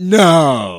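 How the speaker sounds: very loud, drawn-out, sarcastic tone. Explaining how a sarcastic answer sounds, say no sarcastically, as if obvious. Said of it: "more like, no. ... that would have been sarcastic".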